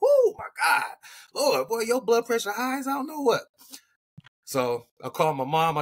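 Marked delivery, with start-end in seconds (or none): 0.0-3.4 acted-out screaming, pitched very high. Retelling his reaction to a high blood pressure reading: imitating someone screaming. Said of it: "And he's screaming".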